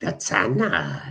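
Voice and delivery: fantasy creature voice from a cave. Mentioning the teams lining up in the tunnel: Gollum impersonation. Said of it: "That's my Gollum impersonation".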